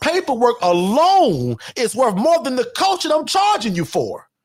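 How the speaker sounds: passionate, excited, high and swooping. A coach addresses new coaching clients, yelling passionately. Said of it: "Excuse me for yelling".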